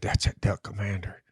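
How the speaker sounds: soft, hushed whisper. Retelling what a man's buddy whispered to him about the speaker: whispered. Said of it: "his buddy whispered to him".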